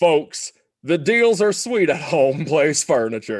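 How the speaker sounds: put-on Southern drawl, local commercial advert style. Trying out a promo line imitating an old furniture commercial: Home Place Furniture ad Southern drawl. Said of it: "to put on some drawl".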